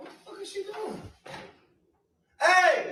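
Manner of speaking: shouting. Reacting to a scene, then calling out: yelling. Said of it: "Why are you yelling?".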